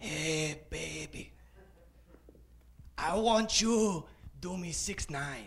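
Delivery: put-on low, hushed, seductive bedroom voice. Retelling a line said to the speaker's wife in bed, in a put-on sexy voice. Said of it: "I put on my sexy voice".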